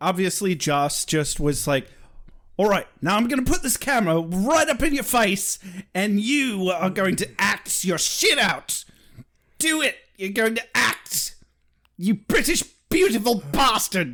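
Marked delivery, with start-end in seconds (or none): 2.6-14.1 put-on pitched-up Australian accent. Praising an actor's scene, voicing the director urging him on: Crocodile Hunter impression as director. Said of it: "my best Crocodile Hunter turned director impression".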